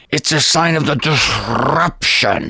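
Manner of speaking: very slow, stern German commandant voice. Retelling what a German friend would say, imitating Herb Dirks's voice. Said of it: "Sound like a German commandant".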